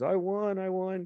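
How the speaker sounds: very high, drawn-out, top-of-the-lungs screaming. Retelling a guy who just won at the racetrack: imitating someone screaming. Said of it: "screaming at the top of his lungs".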